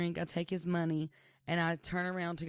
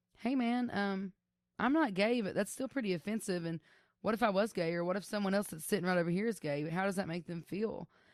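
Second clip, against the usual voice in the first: ordinary talk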